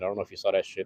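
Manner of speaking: ordinary talk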